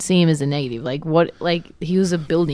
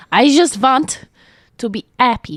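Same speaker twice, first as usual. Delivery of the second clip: bad fake German accent, pitched up; 7 semitones higher, 4 dB louder than usual. Acting out what a man says during a therapy session, shitty german accent. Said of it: "Do the shitty German accent".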